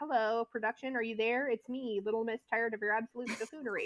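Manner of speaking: ordinary talk, nothing marked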